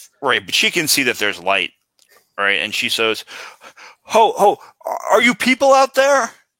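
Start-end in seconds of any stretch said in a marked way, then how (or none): 4.0-6.3 very high, shrill, loud hollering shout. Voicing a woman at a window calling to people outside: shouting from a window. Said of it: "looks out and shouts".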